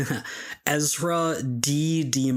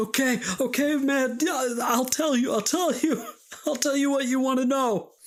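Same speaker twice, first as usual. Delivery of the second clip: very high, pained, strained begging plea; 12 semitones higher than usual. Voicing a captive pinned down and writhing, pleading in pain. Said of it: "is he screaming, he's writhing underneath Bobby".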